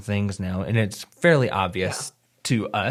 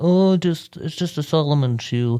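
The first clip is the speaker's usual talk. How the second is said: high-pitched, mocking dismissive voice; 7 semitones higher, 4 dB louder than usual. Discussing a shoe with a co-host, mimicking what people say in a mocking voice. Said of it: "That's that's my mocking voice".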